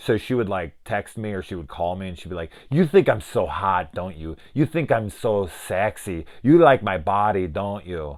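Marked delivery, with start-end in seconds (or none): 2.7-8.2 put-on German accent. Retelling what a German babysitter said on the phone: put-on German accent. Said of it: "That's my accent".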